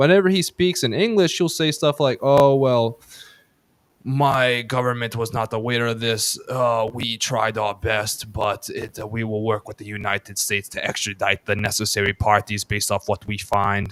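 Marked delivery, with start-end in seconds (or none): 2.2-13.9 put-on assumed Slavic accent. Quoting how he talks whenever he speaks English, put-on Slavic accent. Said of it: "I'm doing more of a Slavic accent".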